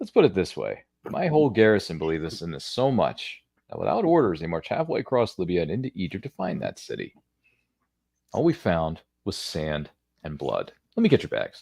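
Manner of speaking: lively put-on character voice, pitch swinging wide. Performing a character's lines, Brendan impression. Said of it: "It's a pretty good Brendan impression".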